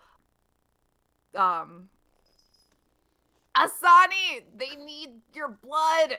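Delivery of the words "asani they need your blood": loud, high-pitched yell. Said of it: "and I yell".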